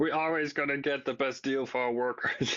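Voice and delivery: teasing, mocking put-on voice. Mocking a quoted line about getting the best deal: Francois-Philippe Champagne impression. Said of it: "That's a pretty good impression".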